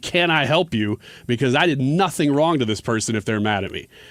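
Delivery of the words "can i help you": slow, firm, stern delivery. Retelling turning around in a driveway to confront a driver: stern, imitating own past words. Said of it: "I'm gonna ask them very sternly".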